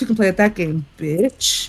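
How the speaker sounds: low mumble under the breath. Voicing a character casting a spell at an enemy: muttering under breath. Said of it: "I'm muttering under my breath".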